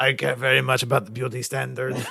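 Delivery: put-on fake Russian accent. Voicing a little character they are discussing, the speaker talks in a Russian accent.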